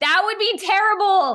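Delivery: shrill, very loud, high-pitched shout. Speaking to listeners on a podcast episode, shouting. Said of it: "Sorry for shouting".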